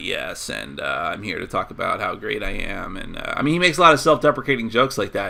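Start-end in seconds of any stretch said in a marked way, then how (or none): 0.0-3.0 slow, dragged-out delivery with heavy creaky vocal fry. Critiquing a live Q&A, mimicking the speaker's Joss Whedon vocal fry. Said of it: "he has this vocal fry thing going on. I was like".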